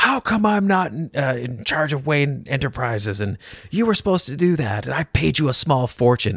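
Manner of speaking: mock exasperated tone. Retelling a man getting right up in Bane's face, imitating him frustrated. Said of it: "he's so frustrated".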